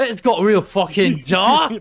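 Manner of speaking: put-on deliberate, strong, loud, drawn-out British accent. Repeating another player's line back, imitating a British accent. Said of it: "That accent".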